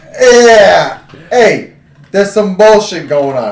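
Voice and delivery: put-on Italian accent. Joking about recasting a Jedi as Italian: Italian Jedi accent. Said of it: "an Italian Jedi?".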